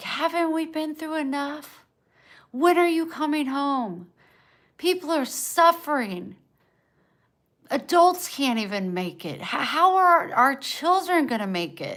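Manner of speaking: high-pitched screaming. Telling about her long fight with God while alone, retelling own screaming at God. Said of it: "I was screaming".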